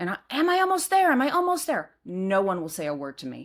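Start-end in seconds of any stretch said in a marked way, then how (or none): 0.3-1.9 frantic, very high, loud panicked shouting. Recounting being halfway down in pitch dark, the speaker retells a yell. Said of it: "And I'm yelling".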